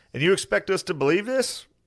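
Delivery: very high put-on southern accent, cowboy style. Act out the man in the cowboy hat from the documentary, imitating a southern accent. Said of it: "southern accent".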